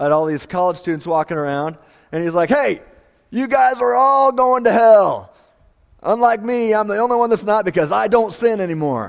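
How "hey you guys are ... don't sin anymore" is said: mock crazy man voice, high ranting yell. Retelling a man on campus yelling at college students: imitating a man yelling. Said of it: "He starts yelling at".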